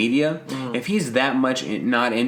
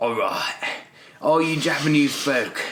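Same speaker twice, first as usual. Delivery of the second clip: spot-on action film hard-man voice; 2 semitones higher than usual. Joking about an actor playing any role: Jason Statham impression. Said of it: "This is spot on Jason Statham".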